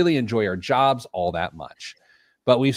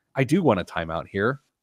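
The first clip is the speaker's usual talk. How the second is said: usual speaking voice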